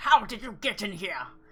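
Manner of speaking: raspy, hoarse, very loud spluttering outburst. A man sitting up in bed, with the group gathered around, sputters in a hoarse voice. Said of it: "he sputters in a hoarse voice".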